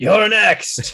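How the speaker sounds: full-throated, very loud, high bellow. In a game, an enemy looks up at his next opponent, bellowing. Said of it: "just bellows out".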